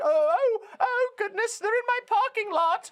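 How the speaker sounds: whiny, very high, put-on British old woman voice. Mocking someone saying they're in my parking lot, whiny put-on British accent. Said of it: "I'm doing the British voice because that's what you sound like. You sound like a whining grandmother".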